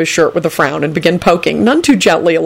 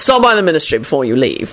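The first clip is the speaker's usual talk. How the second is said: plain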